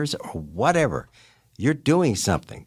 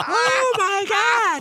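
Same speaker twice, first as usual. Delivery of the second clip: put-on very high, girlish scream like a little girl. Telling of clinging to a saddle horn with the camera on: retelling screaming like a little girl. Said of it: "Here comes the bandit screaming like a little girl".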